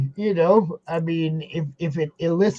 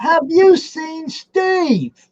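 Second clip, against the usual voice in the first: very high put-on English accent; 12 semitones higher, 4 dB louder than usual. Deciding to say a phrase every time in an english accent. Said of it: "I'm gonna start saying that every time with the English accent".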